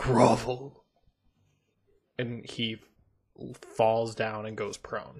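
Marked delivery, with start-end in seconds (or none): 0.0-0.8 deep reverberating echoing voice, louder. A player's character speaks to a man slowly walking away, deep reverberating voice. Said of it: "my voice gets really deep and kind of reverberates".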